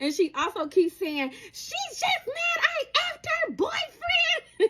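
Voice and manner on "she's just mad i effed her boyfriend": put-on scream, higher. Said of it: "She's screaming to the top of her lungs".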